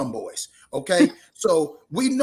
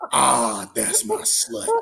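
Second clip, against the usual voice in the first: low, rough, creaky creepy voice; 5 semitones lower than usual. Retelling what his boy Marcus just said: imitating Marcus's creepy voice. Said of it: "He said creepy voice".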